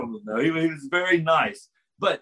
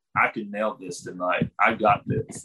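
put-on serious tone, much lower; 8 semitones lower than usual. Retelling how a travel companion earnestly pitched a joke, quoting him: mock-serious quoting. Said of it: "he was all serious".

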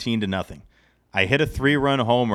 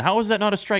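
mock, very high-pitched, put-on yelling; 9 semitones higher than usual. Former umpire recalling a parent at a Little League game: imitating a yelling dad. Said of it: "the dad's yelling".

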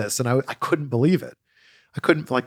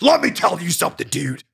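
raspy, raised-pitch wrestler voice; 5 semitones higher than usual. Showing a version of Hulk Hogan everybody can do. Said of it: "some sort of version of Hulk Hogan".

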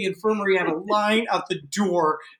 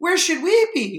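put-on sweet, cute small-child voice, pitched up; 7 semitones higher than usual. Retelling asking a person in charge at camp, imitating a cute little kid voice. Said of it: "in this cute, like, little 10 and 11 year old voice".

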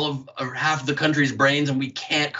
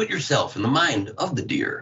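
full-on on-air broadcaster voice. Imitating a video narrator's line: full on broadcaster voice. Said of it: "Full on broadcaster voice".

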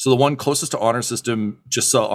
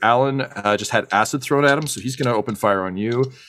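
plain

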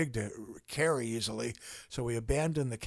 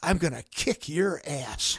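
put-on mild parrot yell, pitched up, drawn out; 5 semitones higher than usual. Retelling how the parrot yelled at the insurance adjuster: imitating Charlie the parrot yelling. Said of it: "he yells out, in my tone of voice".

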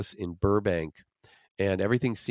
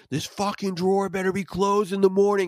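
very high, fed-up scream at breaking point; 11 semitones higher than usual. Retelling yelling at a ghost over an open kitchen drawer: imitating his own scream. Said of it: "I just screamed".

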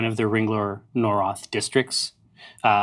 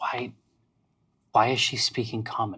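soft, hushed whisper; 7 dB quieter than usual. Voicing soldiers overheard muttering among themselves: whispering soldier. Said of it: "you can hear sort of in the whisper".

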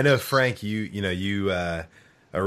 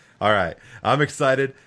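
usual speaking voice

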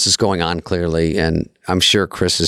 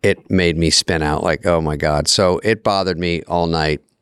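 ordinary talk

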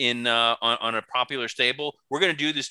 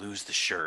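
hushed, soft, leering whisper close in; 5 semitones lower, 7 dB quieter than usual. Retelling how a wrestler leaned in to another wrestler: imitating a whisper. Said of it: "whispers into his ear".

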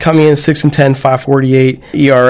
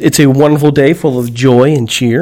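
ordinary talk

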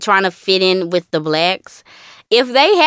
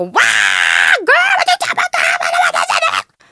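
mock very low, very slow hollering with swooping pitch; 10 semitones lower than usual. Speaker imitates a mama on the phone heard down the block: imitating a mama hollering. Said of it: "on the phone hollering".

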